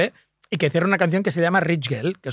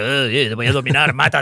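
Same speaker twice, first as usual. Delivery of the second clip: put-on talking dog voice, pitched lower; 4 semitones lower than usual. Retelling a film scene where a dog speaks: John Turturro voicing a talking dog. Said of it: "la voz de John Turturro diciéndole".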